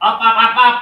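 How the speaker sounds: very loud, voice pushed up high. Testing the microphone volume, raising voice. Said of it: "I'm going to raise my voice".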